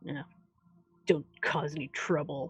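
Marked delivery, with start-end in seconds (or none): 1.1-2.5 said over the shoulder, tossed back, quieter. Game narrator voicing a half-orc walking away from the group, said over the shoulder. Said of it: "over his shoulder as he's leaving, he's like".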